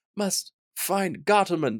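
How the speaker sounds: put-on breathy, airy voice. Acting out a half-dead character's repeated line, in a put-on breathy voice. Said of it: "He's kind of breathy".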